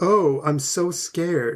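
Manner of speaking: dripping sarcasm, slow, pretend scared. Retelling a man's response to a plea that a wife is in danger, imitating a sarcastic reply. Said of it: "with this totally sarcastic look of".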